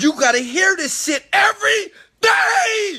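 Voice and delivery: shrill, booming, very loud high rising scream. Urging listeners to hear encouragement every day, screaming. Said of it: "I know I'm screaming".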